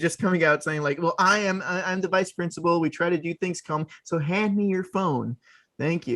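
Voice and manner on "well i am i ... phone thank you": put-on cool-guy voice. Discussing a recast, one speaker imagines James Karen as the vice principal, trying to sound cool. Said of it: "He's trying to be cool".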